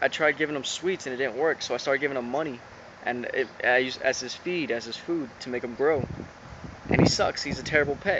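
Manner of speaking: usual speaking voice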